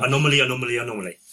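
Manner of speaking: very fast rapid-fire repetition. Repeating a word three times when asked to: said very quickly. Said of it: "Say it three times really quickly".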